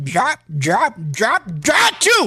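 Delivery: slow, drawn-out sneeze sounds with big swoops. Showing the others a joke impression of a movie star sneezing: Clark Gable sneezing. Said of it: "This is Clark Gable sneezing".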